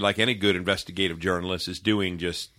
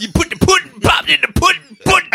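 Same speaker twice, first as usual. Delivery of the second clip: shrill, loud, high comic squealing voice; 8 dB louder than usual. Joking about a failed accent attempt, doing a Bill Cosby impression. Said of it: "I just sounded like Bill Cosby".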